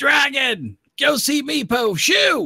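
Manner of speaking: shouting in goblin voice. Voicing a little goblin yelling at a dragon: goblin yelling. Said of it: "but I'll be yelling".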